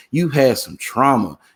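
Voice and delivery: normal talking voice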